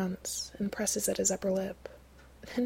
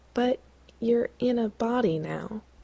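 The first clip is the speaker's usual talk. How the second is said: cautious, careful delivery in a raised voice; 3 semitones higher, 5 dB louder than usual. Sam speaking to Gabriel, as the narrator reads it: careful. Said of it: "Sam says carefully".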